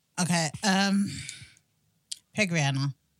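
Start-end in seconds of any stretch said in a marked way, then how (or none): 2.4-2.9 casually dismissive, offhand tone, lower. Answering the group's pick-a-celebrity question, in a dismissive, offhand tone. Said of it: "Why are you saying it like that?".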